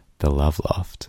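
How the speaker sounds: deliberately creepy, put-on voice. Leaning into the microphone to name the bedroom loft: put-on creepy voice. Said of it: "that sounds so creepy".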